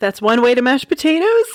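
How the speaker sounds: rushed, holding in laughter. Telling a joke while trying not to laugh, said real quick. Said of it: "say it real quick so I don't laugh".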